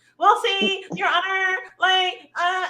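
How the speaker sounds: put-on Valley Girl talk. Imagining a woman addressing a judge in court, in a Valley Girl voice. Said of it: "I wonder if she used the Valley Girl voice".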